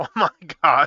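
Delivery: loud, talking through a burst of laughter. Reacting to a toy figure's build, laughing while talking. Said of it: "I'm just laughing".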